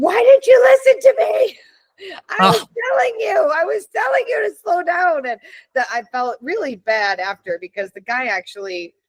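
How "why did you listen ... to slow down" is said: mock frantic, panicked, worked-up screaming, very high. Recalling a crash, the speaker reenacts retelling screaming at the driver who hit her. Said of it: "I was screaming at the guy who hit her".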